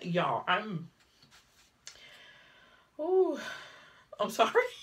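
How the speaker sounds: tearful, barely holding together, pitch swooping. Talking about sharing a life with a man, the speaker is holding back tears. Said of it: "I'm trying my best not to cry".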